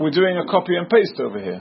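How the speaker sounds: plain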